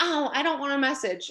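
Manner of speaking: mock reluctant, selfish, self-centred tone. Mimicking newbies who push back on messaging, mocking a selfish newbie. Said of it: "I say it in that voice because it is so selfish".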